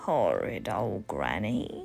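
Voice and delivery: very deep, low, growling wolf-like beast voice. Reading a story aloud, the wolf's line about granny, in a growling wolf voice. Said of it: "the wolf growled".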